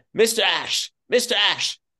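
play-acted, very slow, high, stretched-out, drawn-out yell. Telling how the actor called out to Arthur Ashe at a hotel, retelling Richard Burton's yell. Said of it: "suddenly hears this yell".

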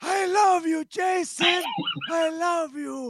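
very high, very slow, drawn-out smoker's voice. Showing off a best fighter impression to the guest: Yoel Romero impression. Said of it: "my best, I think, is Yoel".

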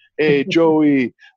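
put-on warm, friendly, welcoming Nigerian accent. Recalling how a man greeted him once they got to know each other, Nigerian accent. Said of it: "he had that awesome Nigerian accent".

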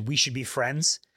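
ordinary talk, nothing marked

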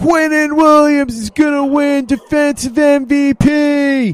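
play-acted shrill shout, very high and drawn out. Retelling what a gentleman at the game yelled out: imitating someone yelling. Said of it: "a gentleman yells out".

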